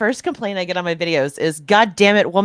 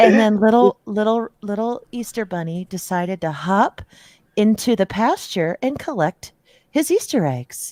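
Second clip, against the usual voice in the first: mock hushed, soft gentle voice. Mocking another speaker's soft reading: mock hushed bedtime-story voice. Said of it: "trying to talk to a five-year-old without waking him up".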